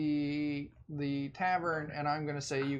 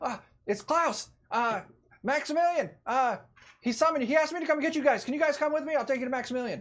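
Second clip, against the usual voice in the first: excited, eager, very high and loud voice; 11 semitones higher, 6 dB louder than usual. At the party's inn room door, Klaus comes to fetch them: excited Klaus voice. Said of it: "an excited voice respond back".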